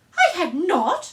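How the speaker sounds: very loud, high, furious, sharp angry shout. Reading a story aloud, the narrator gives the Mouse's reply to Alice as a sharp, very angry cry. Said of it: "cried the Mouse sharply and very angrily".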